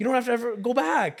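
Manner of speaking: mock crying, very high-pitched, loud and tearful. Retelling the phone call announcing the speaker is cancer free, imitating someone crying. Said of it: "she starts crying on the phone".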